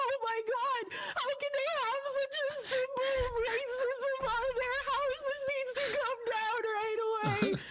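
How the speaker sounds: very high-pitched, teary, indignant, outraged voice. Retelling a woman on an old show seeing a Confederate flag, imitating someone crying in outrage. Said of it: "she's just like crying over everything".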